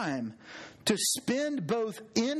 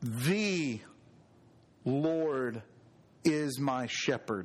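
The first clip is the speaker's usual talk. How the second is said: LORD stressed, drawn out, low and slow. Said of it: "emphasize each word".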